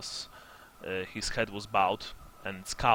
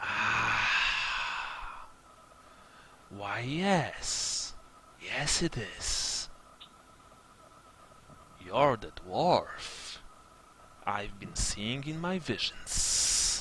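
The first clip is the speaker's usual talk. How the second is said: hissing, swooping human-bird-snake blend creature voice; 4 dB quieter than usual. Voicing a creature answering the dwarf's question, hissing bird-snake creature voice. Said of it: "He hisses".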